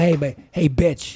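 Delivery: distinctive slow talk, every word drawn out. Imitating how Terrence Howard talks: Terrence Howard impression. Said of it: "the way he talks".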